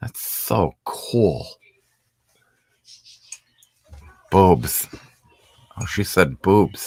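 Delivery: slow, breathy, drawn-out drawl. Showing coworkers' nickname by doing a Butthead voice. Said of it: "I do a great, used to do a great, uh, Butthead".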